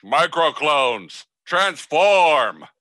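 loud, high toy voice, called out. Voicing a noise heard in the night while Billy's asleep: loud toy voice. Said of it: "it's so loud".

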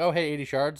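mildly sarcastic, mocking tone. Retelling own earlier remark about eighty shards: imitating own sarcastic tone. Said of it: "saying it kind of sarcastically".

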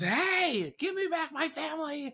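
put-on, very high, screaming and demanding. Retelling how Max, approaching a group of elves, screams: acting out a scream. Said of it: "And he screams".

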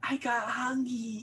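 sweet, cutesy, high little voice. Repeating the other person's usual line back to them in a cutesy voice. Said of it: "I like the cutesy voice".

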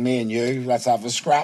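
ordinary talk, nothing marked

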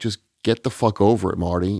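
ordinary talk

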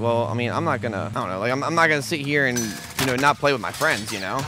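normal talking voice

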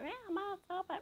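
play-acted shrill yell, very high. Retelling the moment Mum yelled at you: retelling Mum's yell. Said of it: "Mum just yelled out".

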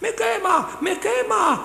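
very high, slow, drawn-out howl of pain. Narrator reading the tiger's cry as the peasant burns its fur, howling. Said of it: "Aullaba el tigre".

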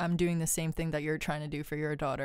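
ordinary talk, nothing marked

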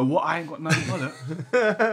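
ordinary talk, nothing marked

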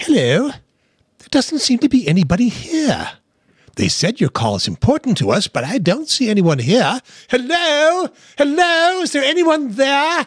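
very high, swooping, sing-song put-on character voice. Suggesting an idea, the speaker does their best Roaming Gnome voice. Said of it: "this is my best impression of the Roaming Gnome".

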